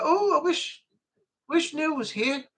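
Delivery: put-on northern English accent. Acting out the listener wishing Neil was here, to their face, imitating a northern accent. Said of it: "in your northern accent".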